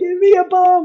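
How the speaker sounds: loud, high-pitched yell. Retelling calling out the side to other drivers: imitating yelling out the window. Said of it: "I'm yelling, like".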